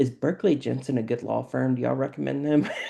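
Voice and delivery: play-acted, straight, level, flat deadpan tone. Retelling asking store employees about the store name, imitating own deadpan question. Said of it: "with deadpan".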